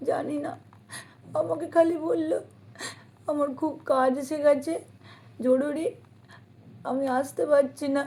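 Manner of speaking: speaking through tears. Explaining that he said urgent work kept him from coming, crying, tearful. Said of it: "তুই কাঁদিস না".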